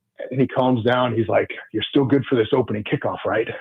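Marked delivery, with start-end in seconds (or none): 1.7-3.5 put-on thick Italian accent. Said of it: "he's got that thick Italian accent to him".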